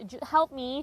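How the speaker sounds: lively, nervous, high, bright pleading tone. Retelling begging a bus driver for help: imitating own lively nervous pleading. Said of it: "and I'm trying to be lively".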